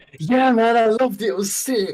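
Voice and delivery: fake, strained enthusiasm. Retrying an answer just called unenthusiastic, the speaker gives fake enthusiasm. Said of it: "that just sounded fake".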